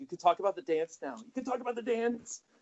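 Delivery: mock teary, very high, soothing, repetitive delivery. Acting out a comic murder scene: put-on near-crying reassurance. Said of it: "reassuring him, but almost kinda crying".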